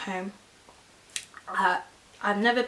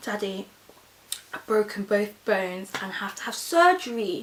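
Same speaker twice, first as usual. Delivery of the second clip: ordinary talk, nothing marked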